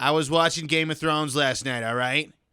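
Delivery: put-on loud, high old woman Boston accent. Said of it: "how would she say Game of Thrones?".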